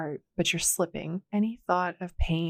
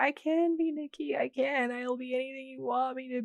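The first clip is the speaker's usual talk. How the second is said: mock high, pitiful sobbing and begging; 7 semitones higher, 3 dB quieter than usual. Retelling a scene, quoting her on her knees: imitating pitiful sobbing. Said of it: "while she's still sobbing pitifully".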